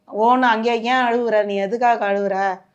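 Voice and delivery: ordinary talk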